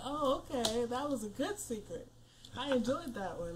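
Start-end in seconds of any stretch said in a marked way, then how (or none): none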